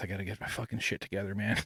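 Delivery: breathless, winded. Speaker describing a meltdown notices being winded mid-sentence; out of breath. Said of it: "I'm like out of breath".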